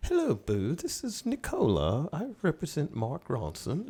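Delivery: put-on strong British accent in a very high voice. Retelling a phone call from a young lady: very british accent. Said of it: "a young lady with a very, uh, British accent".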